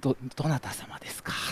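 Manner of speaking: small, quavering, trembling whispered voice. Retelling what a muscular man asked, imitating a small trembling voice. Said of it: "震えながら小さい声で".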